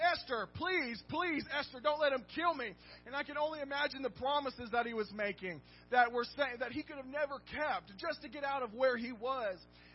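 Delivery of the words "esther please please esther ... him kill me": put-on pleading cry, crying out. Speaker acts out Haman begging Esther, acting out crying out. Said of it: "he's crying out to her".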